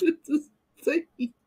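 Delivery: words broken up by laughing throughout. Reading comments aloud, laughing while talking. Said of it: "I gotta stop laughing".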